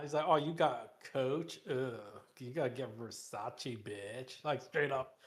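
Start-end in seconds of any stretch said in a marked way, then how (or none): 0.3-4.4 spoiled brat voice, very slow and drawn out. Acting out own daughter as a spoiled brat bragging: imitating a spoiled bratty girl. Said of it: "That's gonna be my daughter now".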